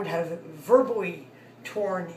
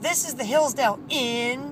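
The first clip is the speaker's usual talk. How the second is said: mock rude, put-out, offended tone; 6 semitones higher, 4 dB louder than usual. Retelling how a hotel worker answered the phone: imitating a rude tone. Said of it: "in a rude tone of voice".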